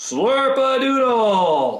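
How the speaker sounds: very high, full-volume, all-out outside voice shout. Showing a learner the outside voice: shouting as loud as possible. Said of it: "shout "Slurpadoodle" as loud as you can".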